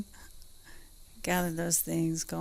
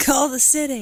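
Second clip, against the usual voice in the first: high, loud scream. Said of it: "That is scream call".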